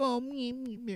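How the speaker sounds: put-on squeaky, very high baby talk voice. A man complains about women using baby talk, mocking girls' baby voice. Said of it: "doing a baby voice".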